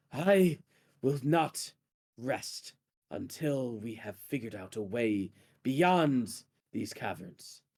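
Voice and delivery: slow, drawn-out, private confiding voice. Voicing a figure talking quietly amongst rats in a cavern: hushed voice. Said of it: "talking amongst the rats in a hushed voice".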